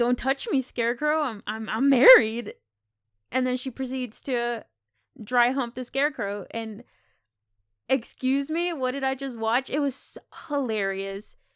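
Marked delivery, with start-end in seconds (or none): 0.0-2.5 outraged, loud, indignant screamed yell. Retelling how she yells at the scarecrow: imitating her yelling. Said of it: "you just yell at him".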